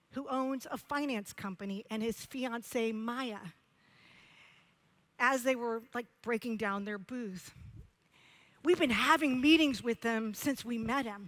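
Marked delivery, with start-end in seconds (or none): none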